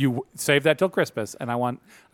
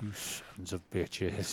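hushed, whispered, muttered grumbling under the breath; 5 semitones lower, 14 dB quieter than usual. Telling how a man reacted to a christmas card from work: retelling a grumble under breath. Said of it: "just grumbled under his breath".

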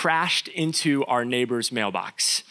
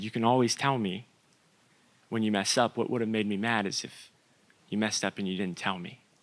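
put-on very gentle voice, lower and quieter; 4 semitones lower, 5 dB quieter than usual. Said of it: "my dad just super gently".

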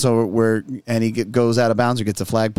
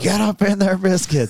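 high-pitched coach-style yelling; 8 semitones higher than usual. Retelling how the other coach yelled at his defense: imitating a coach yelling. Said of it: "the other coach was yelling".

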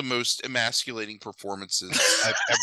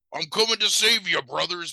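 high, pumped-up, hulking-up hero voice; 6 semitones higher than usual. Imagining the wrestler's character finally showing up: Hulk Hogan voice. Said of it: "I really just wanna do Hogan's voice".

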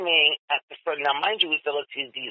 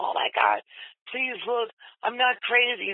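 mock-screaming like a man, much higher; 7 semitones higher than usual. Retelling the speaker's wedding day, when a man kept screaming at the car: imitating a man screaming. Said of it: "And he was screaming".

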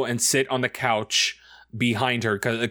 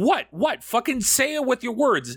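play-acted exasperated, impatient, very high pressing tone; 13 semitones higher than usual. Retelling mom demanding he explain his pointing: imitating impatient mom. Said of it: "And she's like".

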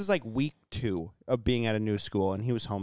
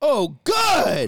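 top-of-the-lungs shriek, very high, very loud; 10 semitones higher, 10 dB louder than usual. Retelling a kid's outburst during prayer time: imitating Cole screaming. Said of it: "screams at the top of his lung".

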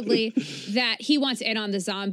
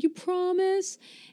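small, high, tearful, put-on whimpering voice; 8 semitones higher than usual. Recapping a scene, acting out Harley's reply to Ivy, imitating Harley whimpering. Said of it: "Harley is like whimpering".

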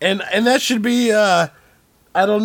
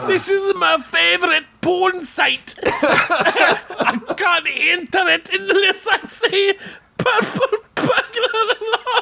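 mock Scottish accent, higher; 11 semitones higher than usual. Acting out a Scottish person failing a spoken test: imitating Scottish people. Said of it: "And Scottish people are like".

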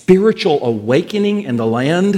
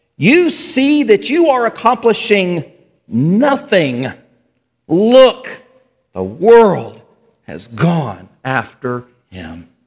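slow, exasperated, fed-up tone; 3 semitones higher, 3 dB louder than usual. Reading aloud what the Pharisees said among themselves, frustrated. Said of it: "Can you hear the frustration in their voice?".

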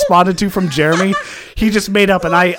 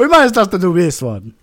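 put-on Italian accent. Repeating another speaker's line as a joke: put-on Italian accent. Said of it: "I was going Italian".

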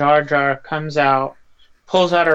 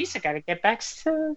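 goofy voice, higher and softer; 7 semitones higher, 8 dB quieter than usual. Doing an impersonation while chatting with others, in a Jar Jar voice. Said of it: "any impersonation you do with Jar Jar voice".

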